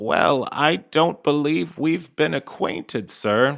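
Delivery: put-on voice like an old grandmother. Narrating a huge swamp creature that slinks toward a stranger: Gator's grandmotherly voice. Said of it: "this grandmotherly voice".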